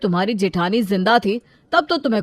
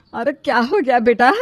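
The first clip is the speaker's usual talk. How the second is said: ordinary delivery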